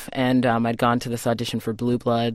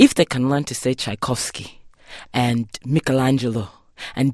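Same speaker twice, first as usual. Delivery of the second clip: imitated Igbo accent. Retelling what the speaker's mother said about the name, in Igbo accent. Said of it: "in her Igbo accent".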